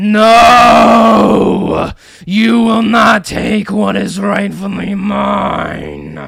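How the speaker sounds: grunting possessed voice. Game narrator voices a companion no longer in control of himself, grunting possessed voice. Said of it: "It grunts out of your companion's mouth".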